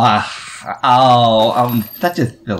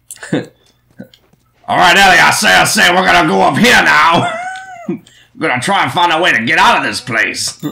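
swooping, high, pitch-swinging cartoon rooster voice; 6 semitones higher, 4 dB louder than usual. Asked to do Foghorn Leghorn, speaking to Ellie in a Foghorn Leghorn voice. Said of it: "do Foghorn Leghorn".

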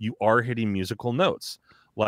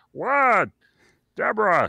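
put-on voice through the nose, higher; 12 semitones higher, 4 dB louder than usual. Showing a behind-the-nose voice: Ray Romano voice. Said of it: "one step away from Ray Romano".

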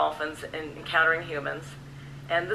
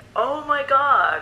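high, loud, slow, drawn-out awestruck gasp. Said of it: "me in the background saying".

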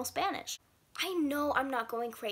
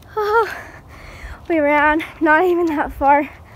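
very loud, winded, out-of-breath burst; 3 semitones higher, 16 dB louder than usual. Just after running to the water at night with friends, out of breath. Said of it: "but we're really out of breath".

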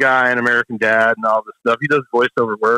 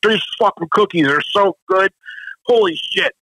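mock talking through mouthful of food, pitched up; 7 semitones higher than usual. Retelling a chef's phone call praising the cookies: imitating talking with mouth full. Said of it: "Mouth full".

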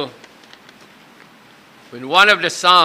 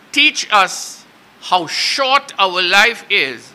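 slow, deliberate, preacher-like delivery. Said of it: "I'll say it slowly".

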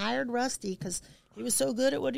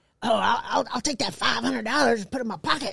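put-on man's voice, getting louder; 5 dB louder than usual. Retelling how a man named Rusty might have talked: imitating Rusty. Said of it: "I like his impression".

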